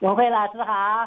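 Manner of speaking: loud, delighted, joyful voice. A caller greets the host teacher; joyful voice. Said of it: "好喜乐的声音".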